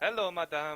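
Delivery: vague, loosely European put-on accent. Voicing the maid greeting the players: vague European accent. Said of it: "giving her a vague European accent".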